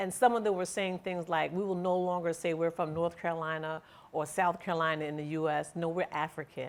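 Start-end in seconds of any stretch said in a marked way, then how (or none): none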